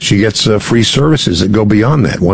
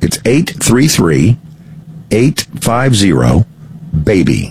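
deliberately slow. Repeating it for listeners since someone else says it too fast: very slow. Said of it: "I'll say it slowly".

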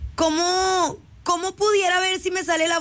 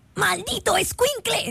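rough, creaky, raspy cartoon dad voice; 4 semitones higher than usual. Asked to imitate Homer and insisting you can't do him, try a Homer Simpson impression. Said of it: "Imita a Homero".

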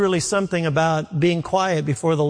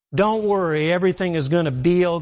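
ordinary talk, nothing marked

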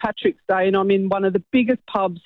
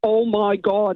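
put-on heavy Northern Irish Derry accent, laid on thick. Retelling a cousin from Northern Ireland calling out from the other toilet: thick Derry accent. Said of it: "in a really thick Derry accent".

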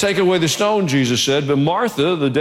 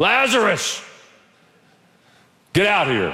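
put-on loud calling voice, higher pitch; 5 semitones higher than usual. Retelling a call to a dead man to come out: retelling a loud call. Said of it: "Jesus said it in a loud voice".

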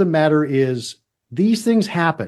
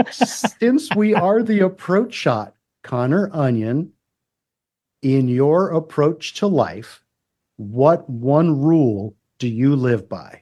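very slow, stretched-out, drawn-out delivery; 2 semitones lower than usual. Asking a guest a question, giving time to think, very slow. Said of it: "Did I do that slow enough?".

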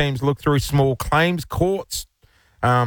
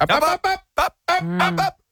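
very high, slow voice, "ups" drawn out. Showing what she does in the meetings: imitating her cutting in. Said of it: "That's what she does to me in the meetings".

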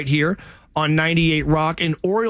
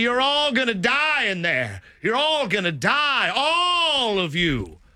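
wild, high, swooping, drawn-out preacher scream; 6 semitones higher than usual. Retelling the sequel's scene, imitating Reverend Cain screaming at the family. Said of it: "Reverend Cain screaming at the family".

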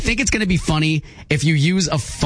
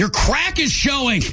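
angry tone with voice pitched up; 8 semitones higher than usual. Showing the other person how to say the phrase, in an angry tone. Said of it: "Say it angry".

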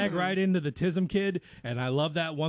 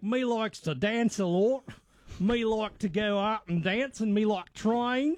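put-on, high-pitched New Zealand accent; 5 semitones higher than usual. Imitating people from a tv show you have been watching, new zealand accent. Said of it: "That's not a bad New Zealand accent".

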